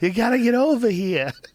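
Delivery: put-on broad, thick Boston accent, very high. Retelling a prank call to a rental car company: heavy Boston accent. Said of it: "this heavy Boston accent".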